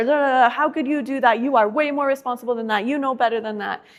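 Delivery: put-on angry parent voice, exasperated, scolding, yelling. Acting out a frustrated mom scolding her daughter: imitating a mad mom yelling. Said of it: "she's yelling at her".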